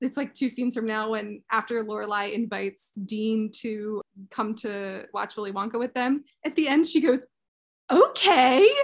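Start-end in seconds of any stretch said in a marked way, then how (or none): 7.9-8.7 loud, weirdly exasperated, fed-up delivery. Retelling an actress's line from an episode: imitating Alexis Bledel's weird exasperated "Okay". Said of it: "in the weirdest voice".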